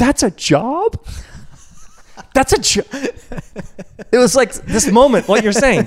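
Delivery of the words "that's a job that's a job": high, swooping, weepy voice full of astonished disbelief. Retelling a man hearing about a hospital chaplain's job, imitating a man crying. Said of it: "the guy starts crying like".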